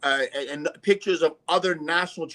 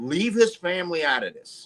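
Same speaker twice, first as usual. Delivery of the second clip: acted out, pleading, imploring appeal; 2 semitones higher than usual. Retelling what was said on a podcast: retelling own pleading. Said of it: "I was pleading with them".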